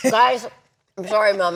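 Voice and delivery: talking with mouth full. Apologizing to viewers while still eating: talking with mouth full. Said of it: "I'm talking with my mouth full".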